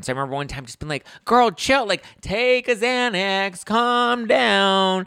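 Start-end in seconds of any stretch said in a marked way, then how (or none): 1.2-5.1 joking, very high, very slow teasing drawl, stretched downward. Retelling telling a hyper friend to calm down, joking Ramona impression. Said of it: "I said that quoting Ramona".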